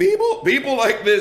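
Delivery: voice cracking on people. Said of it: "and my voice just cracked".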